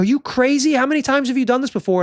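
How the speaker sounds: put-on high-pitched screaming. Retelling how a group at the top reacted to the climbers: imitating people screaming. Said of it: "these people are like screaming at us".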